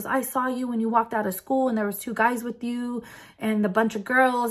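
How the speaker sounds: imitated yelling. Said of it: "he started yelling at me".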